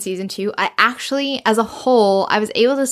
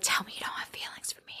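hushed, intimate, very soft whisper. Retelling a scene where Anthony whispers to Kate: imitating Anthony whispering. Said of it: "whispering in Kate's ear".

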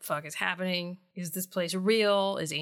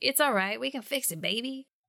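put-on high-pitched dumb guy voice, New Jersey accent; 5 semitones higher than usual. Recapping a story's scene and reading Angel's dialogue, dumb New Jersey guy voice. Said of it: "read like a dumb guy from New Jersey".

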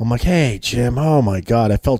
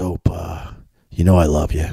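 put-on whisper, lower; 7 semitones lower than usual. Retelling a phone call from Jim Koch during a meeting: imitating Jim Koch whispering. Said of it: "he's whispering 'cause he's obviously in the middle".

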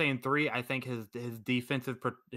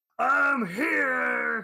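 put-on very high, creaky, rough drunk-man holler; 12 semitones higher, 8 dB louder than usual. Comparing a character to a drunk uncle kicking down the door: imitating a drunk uncle bursting in. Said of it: "like that drunk uncle at the party who kicks down the door and goes".

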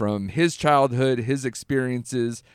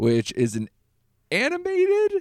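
squeaky odd voice, higher. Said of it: "with a high-pitched, weird voice".

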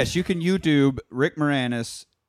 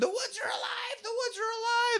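mock screaming, pitched very high; 9 dB quieter than usual. Retelling a movie scene where she runs into the cabin: imitating a screaming woman. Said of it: "she's screaming".

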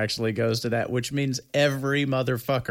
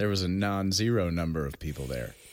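mock-deadpan delivery, much lower pitch; 4 semitones lower, 3 dB quieter than usual. Retelling what a man unironically told a judge, imitating a deadpan delivery. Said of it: "like deadpan".

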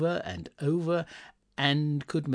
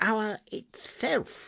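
victorious, triumphant, pitched-up delivery; 8 semitones higher than usual. A man counting bell chimes aloud reaches the hour, speaking triumphantly. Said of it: "said Scrooge triumphantly".

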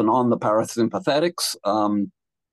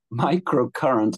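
microcurrent drawn out slowly and with care. Repeating a technology's name carefully for listeners: said slowly. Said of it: "let me say that slowly".

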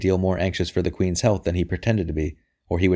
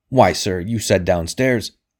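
wrathful, angry, slower pace; 3 dB louder than usual. Sir Amyas turns on the other man, wrathful. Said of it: "Sir Amyas turned on him wrathfully".

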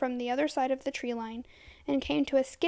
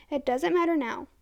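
ordinary delivery

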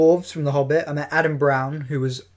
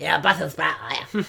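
rough, raspy, creaky put-on voice; 4 dB quieter than usual. Retelling what Kenny Baker said to a young Scout: imitating Kenny Baker. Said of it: "He did talk like that. He went".

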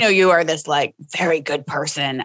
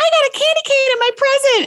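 put-on very high, shrill small child voice. Retelling telling someone over the din about a present, in a shrill little voice. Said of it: "my shrill little voice over the din goes".

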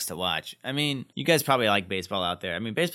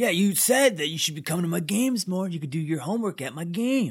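put-on angry young man voice, higher pitched; 7 semitones higher than usual. Retelling a boyfriend's lines to a girlfriend: imitating Dean sounding mad. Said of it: "You're making him sound like he's mad".

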